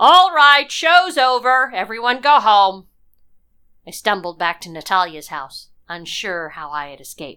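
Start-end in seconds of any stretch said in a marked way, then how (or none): 0.0-2.9 very loud, high, raised yell. The chief of police addresses everyone after the arrests, shouting. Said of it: "the chief of police was shouting".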